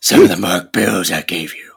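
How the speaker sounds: very low, deep, silly put-on voice. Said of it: "the voice".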